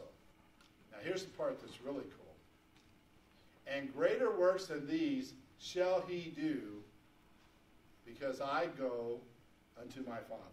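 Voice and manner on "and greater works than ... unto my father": real slow, deliberate reading. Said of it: "I'm gonna read this real slow".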